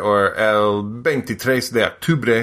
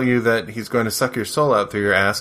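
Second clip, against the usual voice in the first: plain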